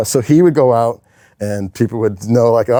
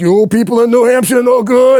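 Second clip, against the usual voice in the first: put-on very high, loud, heavy Boston accent; 12 semitones higher, 5 dB louder than usual. Retelling a wrestler's promo line in his brutal boston accent. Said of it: "He had the brutal Boston accent".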